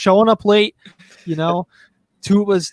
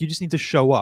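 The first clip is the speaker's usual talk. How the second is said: ordinary talk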